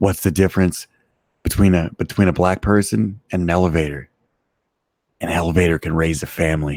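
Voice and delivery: in a whisper. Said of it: "she had to whisper it".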